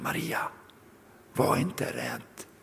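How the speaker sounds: hushed whisper, barely audible, very quiet. Acting out God's address to Maria, telling her not to fear, whispered. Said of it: "Det som man viskar så här".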